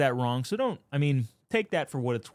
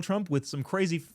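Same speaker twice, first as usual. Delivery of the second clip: normal talking voice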